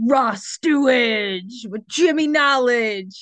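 very slow, drawn-out, eager and enthusiastic delivery. Introducing the chat the way Rob would say it: enthusiastic Rob impression. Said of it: "That's my Rob impression".

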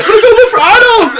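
very loud, very high shouting. Retelling a contestant running off into the jungle: imitating someone yelling. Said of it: "he yells".

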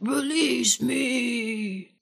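spooky, scary villain voice, drawn-out me. Recapping a Power Rangers episode, a voice calls out: scary voice shouting. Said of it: "hear a scary voice shout".

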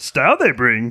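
put-on old alien mentor voice with backwards word order. Answering whether a director said a line in Yoda's voice: Yoda voice. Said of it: "Do you think he said that in Yoda's voice?".

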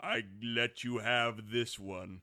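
heavenly, godlike voice, as if speaking from above. Retelling a film scene, a voice from the heavens speaks to Sarah, booming. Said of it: "a voice booms down".

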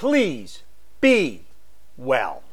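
heartfelt, swooping, with a little heart. Speaker signing off to listeners, repeating the farewell: with a little bit of heart. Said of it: "now I'm going to say it with a little bit of heart".

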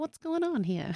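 put-on old-timey 1920s style voice. Recapping what a friend said, in a 1920s voice. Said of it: "Is that the 20s voice?".

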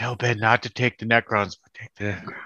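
hushed, whispered words. Retelling what a player whispered in someone's ear: imitating Sam whispering. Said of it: "whispering him in his ear".

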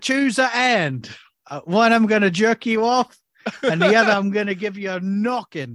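high, terrible, put-on Cockney accent. Imagining an all-English cast in the movie, in a bad Cockney accent. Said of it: "these are the worst accents I've ever heard".

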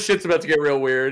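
ordinary delivery

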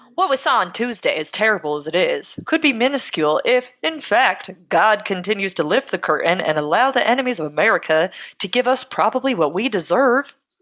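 put-on mid-Atlantic accent.

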